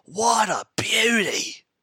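excited wildlife host exclaiming. Retelling how the host held a poisonous snake, imitating the crocodile show host. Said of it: "He'd be like".

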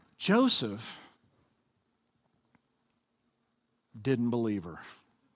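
nice, kindly, gentle voice, soft and low. Telling a story to an audience, first the nice way: said nicely. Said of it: "I'm going to say it nicely".

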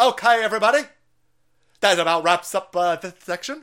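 put-on English accent. Imitating David Icke closing a long seminar: David Icke impression in English accent. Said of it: "I just try to do an English accent".

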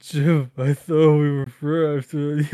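put-on crying. Retelling how he reacted, hurt, speaking to jim: imitating him crying. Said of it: "he drops the Batman voice and just starts crying".

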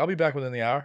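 usual speaking voice

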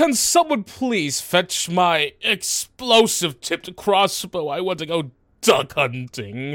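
high distant call. Voicing someone heard shouting in the distance for a crossbow: shouting from a distance. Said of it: "you hear a bit of shouting in the distance".

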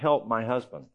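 put-on tearful, crying woman's voice. Retelling a woman begging for help for her sick husband: imitating a crying woman. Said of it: "and she's crying".

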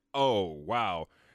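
normal talking voice

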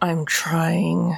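whispered through gritted, clenched teeth. Role-playing, whispering back to Penelope while squeezing her hand; whispering through gritted teeth. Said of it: "I'll whisper back to Penelope, and it's like through gritted teeth".

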